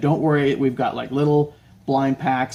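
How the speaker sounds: ordinary talk, nothing marked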